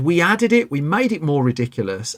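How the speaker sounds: ordinary talk, nothing marked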